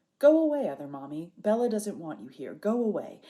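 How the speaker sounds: put-on ghostly séance spirit voice. Retelling people gathered in a candle circle: put-on spirit voice. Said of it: "say in our spirit voices".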